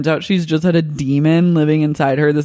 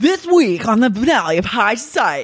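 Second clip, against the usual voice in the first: wired, hyped, pitched-up tv presenter voice; 6 semitones higher than usual. Describing the guy added to narrate the show, quoting him in a coked-out presenter voice. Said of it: "Like a coked out presenter voice".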